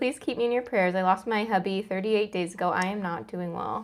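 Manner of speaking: usual speaking voice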